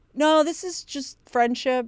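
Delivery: put-on heavy, sorrowful, very sad tone. Speaker retells how a woman answered an apology for being boring: imitating a sad tone. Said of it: "It was actually like very sad the way she said it".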